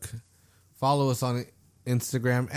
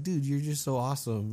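soft, quieter put-on calm voice; 4 dB quieter than usual. Describing how Mister Rogers makes viewers feel good: soft Mister Rogers voice. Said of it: "with his soft voice, he's like".

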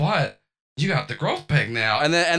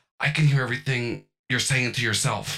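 hushed whisper, much lower pitch; 6 semitones lower than usual. Describing a scene where Peggy leans in to the listener: Peggy whispering. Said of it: "Peggy whispers to you and goes".

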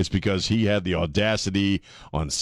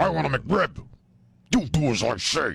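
silly, high, slow voice of a tiny creature; 7 semitones higher than usual. Speaker gives a voice to a growth on their body, voicing the growth. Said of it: "Then we give it a voice".

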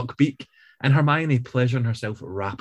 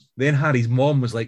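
ordinary delivery

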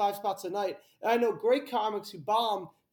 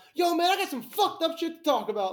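very bad, exaggerated, over-the-top put-on voice, pitched higher; 8 semitones higher, 4 dB louder than usual.

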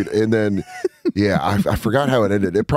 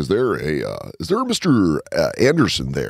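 put-on, swooping caricature voice; 5 semitones lower than usual.

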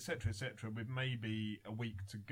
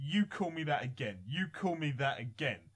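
loud, full-on put-on proper shout; 3 semitones higher, 5 dB louder than usual. Retelling a press conference confrontation: imitating Fury shouting. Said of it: "proper shouting at him".

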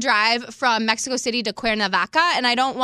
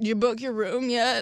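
put-on, soft, creepy guy voice; 5 dB quieter than usual. Retelling what a guy asks every week, imitating a creepy guy. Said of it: "I love how creepy this guy sounds".

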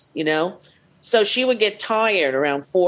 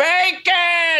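put-on scream, higher pitched; 11 semitones higher than usual. Retelling a coworker calling for bacon every afternoon: imitating someone screaming. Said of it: "She'd scream".

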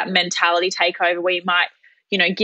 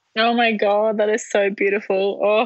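tearful, crying while speaking. Reacting to a message of support from a friend, crying while talking. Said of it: "I'm crying like a baby".

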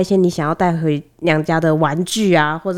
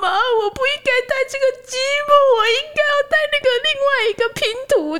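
acted, very high, bawling burst of sobbing tears. Retelling how a boy suddenly burst into tears to his mom, imitating bawling. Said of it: "他就突然大爆哭".

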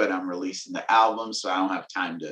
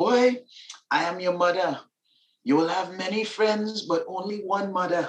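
put-on, very high-pitched Caribbean accent; 11 semitones higher than usual. Describing an audiobook performance, quoting the speaker's mother in her Caribbean accent. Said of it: "my mom's accent".

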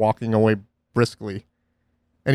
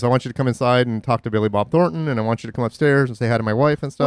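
usual speaking voice

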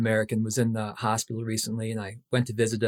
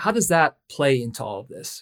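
ordinary talk, nothing marked

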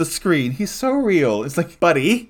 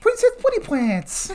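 put-on very high-pitched, cutesy baby voice, pitched way up. Talking about Henry's sister and imitating her, in a put-on baby voice. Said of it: "big time baby voice".

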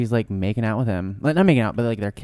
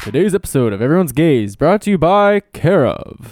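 put-on, raised, pitched-up radio announcer voice; 6 semitones higher, 7 dB louder than usual. Going to a quick break, the speaker uses a radio announcer voice. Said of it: "That was my radio voice again".

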